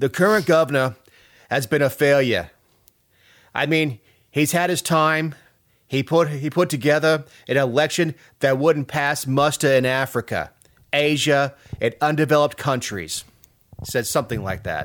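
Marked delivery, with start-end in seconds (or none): 0.0-13.2 deliberately bad put-on Brooklyn accent. Quoting Rudy Giuliani's endorsement remarks about the current governor, in a bad Brooklyn accent. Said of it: "In my worst Brooklyn accent".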